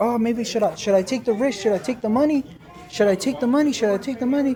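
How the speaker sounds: plain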